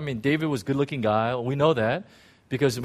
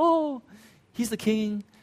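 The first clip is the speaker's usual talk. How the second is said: high, unconvincing, put-on girlish voice; 8 semitones higher than usual. Voicing Bathsheba's thoughts about the king in a Bathsheba voice, girlish. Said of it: "I know girls don't sound like that, but this is my own best impression that I have".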